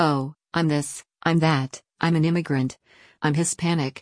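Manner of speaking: plain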